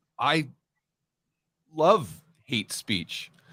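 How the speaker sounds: slow speech broken by pauses. Retelling a friend's remark on stage: imitating Doug speaking slowly with pauses. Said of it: "you know how he kinda speaks really slowly and he pauses?".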